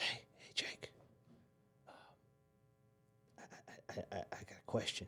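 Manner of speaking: very quiet, slow, hushed whisper. Retelling a friend's phone call from a deer blind, retelling a friend's whisper. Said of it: "he's whispering".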